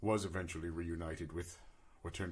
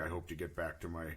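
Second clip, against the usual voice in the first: normal talking voice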